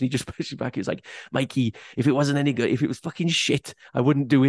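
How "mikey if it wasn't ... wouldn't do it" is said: mock Welsh-accented voice. Retelling a mate's reply to his thank-you message, welsh accent impression. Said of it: "that was my Welsh impression".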